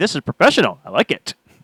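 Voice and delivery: ordinary talk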